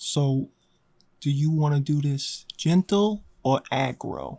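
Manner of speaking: slow, unhurried, hushed half-whisper. Voicing a character who asks a companion quietly: in-character half-whisper. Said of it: "Alandi is gonna whisper".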